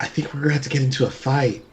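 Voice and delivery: quiet whispering. A tabletop player's character speaks to the group, whispering. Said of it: "I'll whisper".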